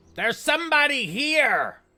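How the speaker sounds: very loud, very high, shrill yell. Voicing a talking mace above a shop door: talking mace yelling. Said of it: "You hear the mace yell above the door".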